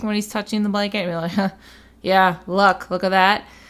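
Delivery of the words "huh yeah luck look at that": mocking, heavily sarcastic tone. Acting out Albus touching the blanket: sarcastic Albus voice. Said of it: "I took it as being very sarcastic".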